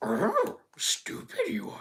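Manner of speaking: very slow, hushed, breathy, soft drawn-out whisper. Describing a friend's really good impression, then doing it: Yoda voice. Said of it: "he can do a really good Yoda voice".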